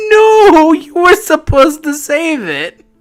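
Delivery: very high, slow, drawn-out, acted wailing sob. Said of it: "and I start crying".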